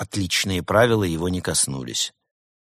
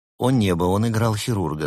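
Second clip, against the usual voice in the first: plain reading voice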